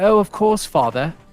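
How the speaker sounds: put-on high toddler voice putting on a British accent. A voice actor recalling his young son, imitating a child's British accent. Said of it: "he could actually sound like he was British".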